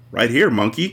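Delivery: ordinary delivery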